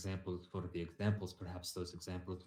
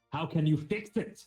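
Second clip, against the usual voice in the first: very loud, high-pitched raised voice; 9 semitones higher, 10 dB louder than usual. Arguing a point with another speaker, in a raised voice. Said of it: "And I'm raising my voice".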